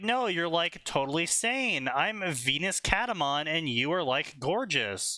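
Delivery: ordinary delivery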